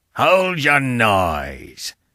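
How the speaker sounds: frightening, terrible outcry with stretched-out noise. Narrator reads a creature's cry from among the church graves: terrible voice crying out. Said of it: "cried a terrible voice".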